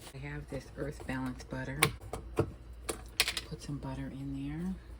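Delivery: soft, hushed, low voice.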